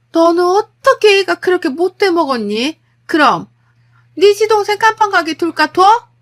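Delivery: high, loud, furious scream at full volume. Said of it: "이러면서 소리를 지르시는 거예요".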